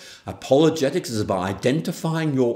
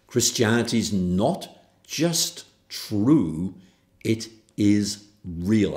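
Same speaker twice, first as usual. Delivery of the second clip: very slow, deliberate, evenly spaced words; 3 semitones lower than usual. Emphasizing an important point in a talk, spoken very slow and deliberate. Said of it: "I'm going to emphasize by speaking very slowly".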